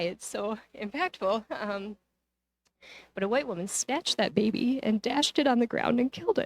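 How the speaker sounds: tearful voice, close to crying. Recounting something read in a book, the speaker speaks tearfully. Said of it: "I'm going to cry".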